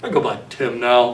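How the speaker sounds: very deep, lowest voice he can manage. Retelling what a little kid said after raising his hand, in the deepest voice possible. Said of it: "in the deepest voice he has".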